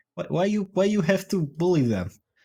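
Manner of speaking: put-on Russian accent. On stream, the speaker imagines producer Ferme talking to them, imitating Ferme's Russian accent. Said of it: "with his beautiful Russian accent and be like".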